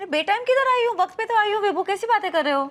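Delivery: heated, high-pitched shouting. In a drama scene, a woman answers her partner's complaint about her arriving, shouting. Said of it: "चिल्ला क्यों रही?".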